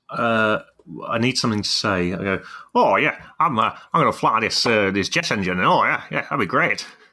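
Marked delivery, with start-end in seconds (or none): 2.7-6.8 loose, hesitant rambling, pausing on the uhs. Asked for an impression, doing a Guy Martin impression. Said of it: "Can you do a good Guy Martin impression?".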